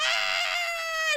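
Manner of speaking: shrieking with laughter.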